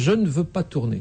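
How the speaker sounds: plain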